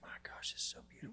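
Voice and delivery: awed, reverent, barely voiced, very hushed whisper. Retelling finding hidden springs deep in a canyon: retelling a whisper. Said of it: "I just started whispering. I was like".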